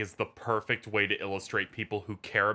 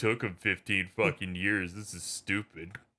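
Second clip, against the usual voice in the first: play-acted scornful, bored, condescending, dismissive tone. Mocking people who don't care about the game's long wait, condescending mocking impression. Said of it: "condescending impression of everyone who doesn't like Kingdom Hearts".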